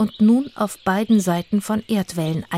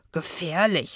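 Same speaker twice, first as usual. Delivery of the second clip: mocking, scoffing and quieter; 7 dB quieter than usual. Narrator reads Itzig answering Zora's boast, mocking. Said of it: "spottete Itzig".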